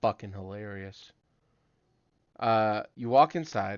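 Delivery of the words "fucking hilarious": dry, expressionless, flat deadpan monotone, no inflection, acted. Retelling how someone standing post answered a joke, mimicking a deadpan monotone. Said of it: "deadpan his monotone voice".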